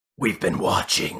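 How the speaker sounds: possessed, demonic, otherworldly voice. Retelling a scene where a floating girl speaks, demonic voice. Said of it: "like this like kind of like demonic voice comes out".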